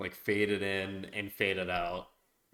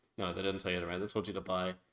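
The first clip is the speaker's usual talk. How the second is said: normal talking voice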